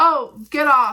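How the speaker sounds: put-on rude tone. Retelling how a lady at the casino told her to get off; mock-rude snap. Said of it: "Like she goes like this".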